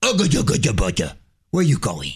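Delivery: put-on baby talk. Showing how they talk to their pets: baby talk to a pet. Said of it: "I talk to them like they're babies".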